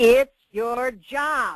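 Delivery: loud, high yell at the top of the lungs. Recalling the answer to a question about keeping enthusiasm up: retelling a full-lung yell. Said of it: "I yelled at the top of my lungs".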